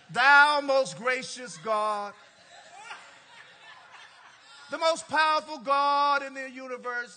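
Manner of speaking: put-on very loud, booming old-English solemn intoning voice. Speaker mocking how people's voices change when they pray, in King James prayer voice. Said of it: "If your voice changes when you pray".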